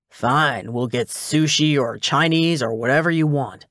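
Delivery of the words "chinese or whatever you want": ordinary delivery, nothing marked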